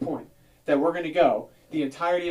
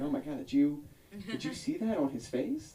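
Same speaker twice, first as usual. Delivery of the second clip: mocking, nice-but-not-friendly Los Angeles voice, quieter; 9 dB quieter than usual. Imitating an la person talking after the acne person walks away. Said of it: "they're like".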